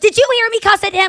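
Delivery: high scream. Retelling a woman on a plane screaming to passengers: imitating someone screaming. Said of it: "screams to the passengers".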